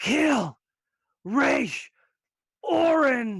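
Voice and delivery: full-throated, loud, high bellow, drawn out. Voicing a dying character's last cry: bellowing as loud as possible. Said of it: "She bellows as loud as she can".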